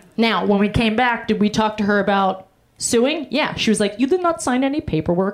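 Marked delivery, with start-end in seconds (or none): 4.0-5.3 roughly done put-on Pakistani accent. Retelling what a woman said about suing: put-on Pakistani accent. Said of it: "I don't know what accent that was. It was for sure Pakistani".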